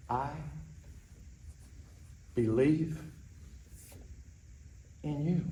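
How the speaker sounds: soft, slow, hushed whisper with silence between words. Demonstrating the words to whisper to a drowsy kid: soft whisper. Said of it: "lower your voice, add silence between the words, and whisper".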